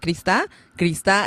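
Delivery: ordinary delivery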